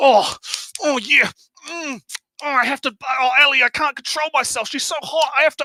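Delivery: overstimulated moans and mm sounds. Mocking how another person sounds on stream: mock aroused moaning. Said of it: "that's what he sounds like".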